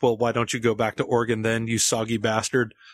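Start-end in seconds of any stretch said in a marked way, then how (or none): none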